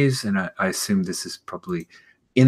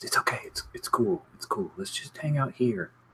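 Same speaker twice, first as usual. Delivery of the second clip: barely audible, hushed, very soft whisper; 3 semitones higher, 10 dB quieter than usual. Margot, hiding behind a towel, reassures the others that it's fine, whispering. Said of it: "But she whispers".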